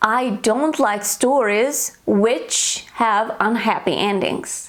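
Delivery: normal talking voice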